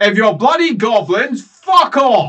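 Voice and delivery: very loud, drawn-out call. Voicing a character calling down a passage to unseen visitors: calling out loudly. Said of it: "I'll call out".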